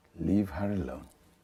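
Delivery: warm fatherly dad-like tone. Warning his son in a scene to leave the woman alone: fatherly tone. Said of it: "in a fatherly tone".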